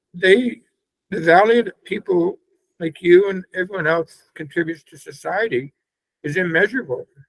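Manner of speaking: tearful speech, speaking through tears. Speaking to someone about the value people bring, crying while talking. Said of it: "And I'm sorry I'm crying".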